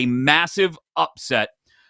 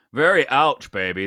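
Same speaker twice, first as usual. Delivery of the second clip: bad put-on British spy voice; 2 semitones lower than usual. Reacting to a joke about a team: terrible Austin Powers impression. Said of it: "That's a terrible Austin Powers impression".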